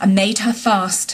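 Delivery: ordinary delivery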